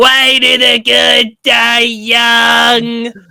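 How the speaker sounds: put-on high, very slow, drawn-out, stretched young-sounding scream. Retelling a cartoon episode, quoting a character's line: imitating Sheen screaming. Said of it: "every time Sheen would scream".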